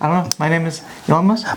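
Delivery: put-on stammering voice. Mimicking how the person talks with repeated starts: Elon Musk impression. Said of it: "that's how he talks".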